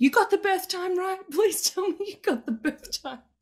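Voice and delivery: play-acted, very high, worried, anxious shouting. Retelling a moment right after a birth: imitating own yelling. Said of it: "I'm yelling at them".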